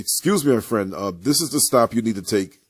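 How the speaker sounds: thunderous, booming, loud voice. Retelling what a man on a bus said to another passenger, imitating a deep thunderous voice. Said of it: "his voice is deeper than that, right? More thunderous".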